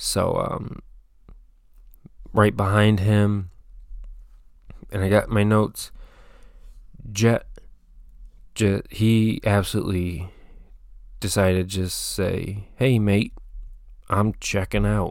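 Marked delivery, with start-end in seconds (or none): 12.8-15.1 put-on easygoing, casual Australian accent. Recapping a heat race, quoting a racer in an aussie accent. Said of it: "That's an Aussie accent".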